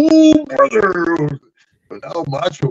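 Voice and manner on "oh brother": very high, squeezed-up character voice pushed way up. Retelling a wrestler's worried reply about snake poison: Macho Man Randy Savage impression. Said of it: "He goes over to Mach".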